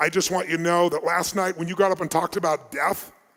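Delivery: ordinary delivery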